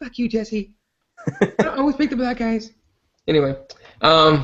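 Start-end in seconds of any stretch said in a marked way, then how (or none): 0.0-2.7 little pop-star voice, small, high and soft. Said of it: "in his little [name] voice".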